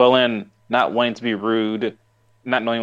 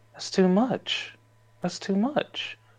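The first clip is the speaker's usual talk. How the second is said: put-on discerning old woman voice, higher, quieter, slower; 9 semitones higher, 6 dB quieter than usual. Retelling a grandmother's reply about their weight, imitating grandma's discerning voice. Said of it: "very discerning voice".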